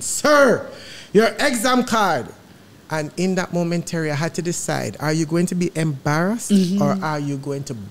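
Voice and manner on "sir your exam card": loud, slow, acted-out raised voice. Retelling an exam official asking for the card again: retelling a raised voice. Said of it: "get on top of his voice".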